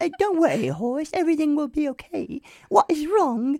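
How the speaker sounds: very high-pitched put-on British accent, boy voice. Retelling a boy character's line from a film: imitating a British boy character. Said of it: "they're British, by the way, so it's like".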